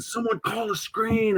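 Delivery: acted drawn-out scream, very high-pitched. Retelling how the coach suddenly stopped practice, imitating someone screaming. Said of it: "He was like screaming".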